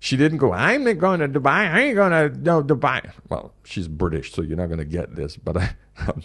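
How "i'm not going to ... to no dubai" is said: woman's voice with flat pushback.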